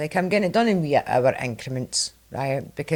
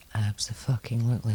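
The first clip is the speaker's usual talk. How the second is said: whispering, lower and quieter; 3 semitones lower, 4 dB quieter than usual. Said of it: "I'm taking away the whisper voice".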